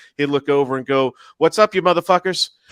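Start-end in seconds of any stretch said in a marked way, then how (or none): 1.4-2.5 blurted at breakneck speed, very fast, pitched up. Retelling how a man greeted passersby, rattled off very fast. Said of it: "he would say it so fast".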